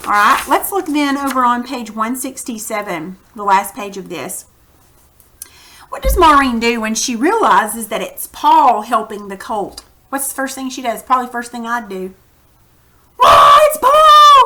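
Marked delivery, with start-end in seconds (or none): 13.2-14.5 high, slow, loud scream. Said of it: "Screaming out".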